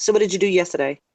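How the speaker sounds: fast, clipped, run-together, sounds dropped, yesterday swallowed. Demonstrating how a sentence sounds said fast: said fast, sounds dropped. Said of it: "Now when I say it fast".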